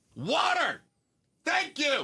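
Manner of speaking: high-pitched, shrill shout. Answering a quiz about Arizona's biggest issue, yelling. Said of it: "You don't have to yell about it".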